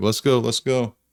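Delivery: urgent, pressing voice. Voicing a character in a running helicopter, urging the players aboard: yelling. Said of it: "starts yelling".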